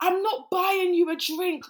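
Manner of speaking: put-on very high-pitched, loud yell. Retelling the first thing a man shouts at them, retelling a shout. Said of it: "He shouts".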